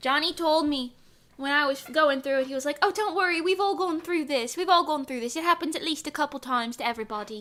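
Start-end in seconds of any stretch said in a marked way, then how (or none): 2.8-7.4 rough, poorly done character voice. Retelling what someone said to reassure the speaker: shitty Johnny impression. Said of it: "That's my shitty Johnny impression".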